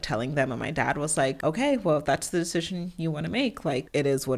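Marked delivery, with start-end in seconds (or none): none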